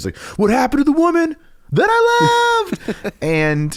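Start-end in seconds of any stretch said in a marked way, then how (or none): 0.4-3.1 yelling voice shooting very high, drawn-out "I". Speaker reenacts a man yelling heard through the wall, imitating a yell going super high. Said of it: "he goes super high for the second part".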